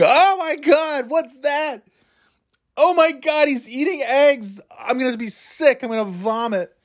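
very high, drawn-out, stretched-out disgusted screaming. Speaker retelling how they started screaming on a quiet day, retelling a disgusted scream. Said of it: "I just started screaming".

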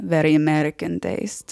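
bored, dismissive, disdainful, unimpressed tone. Retelling a fashion acquaintance looking someone up and down: imitating an Italian fashion acquaintance. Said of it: "I have to do an impression".

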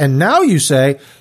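ordinary talk

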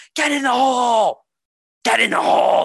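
very high-pitched, drawn-out, top-of-the-lungs scream. Retelling cheering at people playing arcade golf: imitating own past screaming. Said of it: "every shot I was just screaming".

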